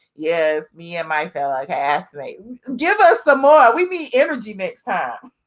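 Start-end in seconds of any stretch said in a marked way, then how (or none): 0.2-2.4 bone-dry, lifeless, flat monotone. Mocking a troll's comment by repeating it: imitating a dry troll comment. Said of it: "You come on here all dry".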